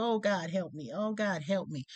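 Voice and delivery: mock crying, tearful, desperate begging. Recalling struggling down the stairs, retelling a crying plea. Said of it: "I'm crying and I'm trying and I'm just like".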